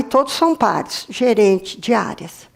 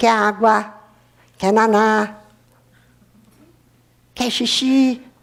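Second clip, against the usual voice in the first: put-on baby talk voice, much slower. Describing how a baby first talks, the speaker imitates it in a baby talk voice. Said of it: "o bebê diz assim".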